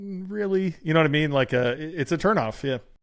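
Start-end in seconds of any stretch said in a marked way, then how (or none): 0.0-0.7 high, skeptical, doubting, disbelieving tone. Retelling own reaction to an ad from that person: imitating own skeptical reaction. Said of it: "from that person without going".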